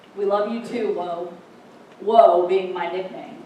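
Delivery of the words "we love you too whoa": plain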